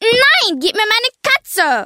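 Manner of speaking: high, slow, shouted scream.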